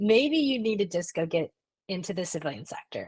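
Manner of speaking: ordinary talk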